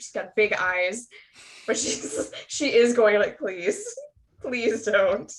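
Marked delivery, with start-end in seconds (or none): 3.4-5.3 really pleading, begging tone with swooping pitch. Voicing a character begging another not to fight: pleading tone. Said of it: "probably in really pleading tone".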